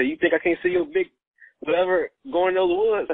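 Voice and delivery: high, playful, teasing holler, mock. Retelling yelling at a cousin across a dark lot: imitating own past yell. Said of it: "So I kinda yelled at my cousin".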